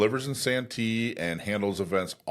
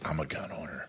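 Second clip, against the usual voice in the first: whispering, much quieter; 5 semitones lower, 8 dB quieter than usual. Retelling a woman's answer after she was told about San Diego County gun owners, whispered. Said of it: "Did she whisper it like that?".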